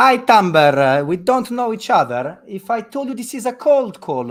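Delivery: booming, loud, slow, put-on Italian accent. Making a cold call to someone he doesn't know, Italian accent. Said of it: "would you hang up on my Italian accent".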